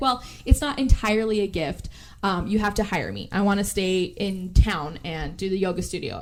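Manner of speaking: usual speaking voice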